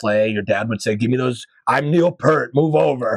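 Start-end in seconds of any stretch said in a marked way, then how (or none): 1.0-3.2 mock drunken speech. Retelling how a drunk dad grabbed the drums: imitating a drunk dad. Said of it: "They were very drunk".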